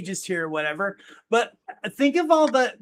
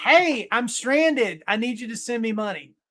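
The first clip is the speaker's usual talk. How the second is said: put-on young kid voice. Warning about AI scam calls, imitating your kid on the phone. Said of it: "it's going to sound like your kid going".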